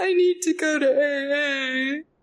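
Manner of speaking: mock uncontrollable sobbing, very slow, A stretched. Retelling opening the door to the friend: retelling uncontrollable sobbing. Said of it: "I'm sobbing uncontrollably".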